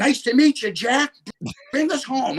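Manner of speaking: put-on high yelling. Retelling yelling to the hawk named jack: retelling own past yell. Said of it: "I'm yelling to Jack".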